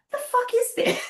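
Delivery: loud shouting with the pitch sent way up. Retelling a stand-up row with a grandmother: retelling own past shouting. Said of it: "the problem for shouting at an elderly lady".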